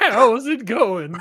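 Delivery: put-on high old-timer western cowboy voice. Improvising a gingerbread man character's greeting, in an old western Gunsmoke voice. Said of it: "it's like an old man's voice".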